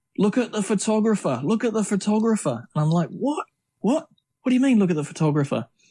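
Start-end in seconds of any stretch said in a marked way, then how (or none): 0.2-2.7 high, acted-out yelling from a distance. Recalling a friend yelling at the speaker during a run, retelling his yell. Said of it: "he's yelling at me going".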